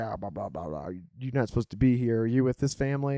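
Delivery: annoyed, irritated, scolding tone. Retelling how a camp host came over to their tent: imitating an angry camp host. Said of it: "kind of angrily".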